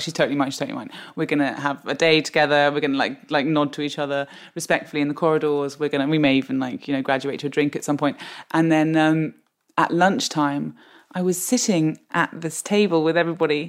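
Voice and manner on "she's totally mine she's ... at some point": plain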